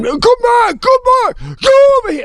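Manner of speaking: put-on, very high, blood-curdling scream. Retelling a neighbor calling his dogs back: imitating a neighbor screaming. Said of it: "screaming like a lion got loose".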